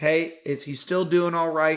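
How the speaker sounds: normal talking voice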